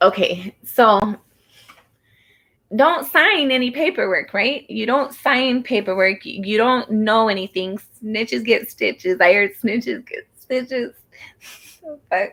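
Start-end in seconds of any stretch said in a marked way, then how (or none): 9.2-12.3 talking through laughter, higher. Joking during a card reading, laughing while talking. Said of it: "I'm gonna quit laughing".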